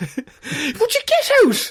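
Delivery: startled, high, drawn-out little yelp. Voicing him in a made-up scene as they come in, with a little yelp. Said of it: "he does a little yelp".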